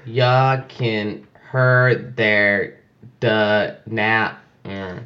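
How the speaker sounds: garbled, mangled, dragged-out text-to-speech robot voice. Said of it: "It was like".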